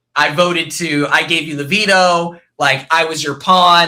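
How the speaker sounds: ordinary delivery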